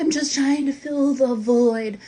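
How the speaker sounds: over-dramatic theatrical delivery. Retelling own past words about an inner void: imitating own dramatic past self. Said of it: "I was all dramatic about it".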